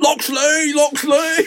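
put-on weird, very high, almost-Cockney accent. Recalling a show scene where the coach comes in calling, weird almost-cockney accent. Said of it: "with the weirdest accent, like a Cockney almost".

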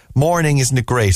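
plain

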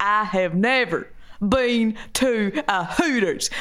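very slow country Southern American drawl. Retelling a woman's words in a southern american accent. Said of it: "southern accent".

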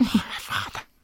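whispered, barely voiced, eerie voice. Quoting a Lord of the Rings film line: Alan Howard's voice of the ring. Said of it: "The voice of the ring is".

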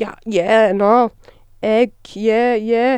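put-on casual, un-posh, common working-class accent. Teasing the other person whose accent changes around people, imitating a common accent. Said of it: "you're like".

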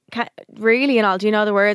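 ordinary talk, nothing marked

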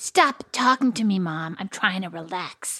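rude, dismissive, drawn-out tone. Retelling a child's words at bedtime, imitating a rude child. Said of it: "was super rude to me".

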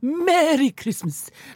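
miserly cartoon voice. Handing out gifts, the speaker says the greeting in a Scrooge voice. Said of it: "That's the way Scrooge says it in the cartoon".

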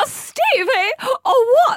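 very high, drawn-out voice. Saying something in the style of the other speaker: imitating Tessa's voice. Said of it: "That's what, what you sound like".

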